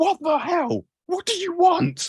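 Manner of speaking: very high, shrill, drawn-out yell. Voicing a character who stumbles back into someone: yelling in character. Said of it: "he yells".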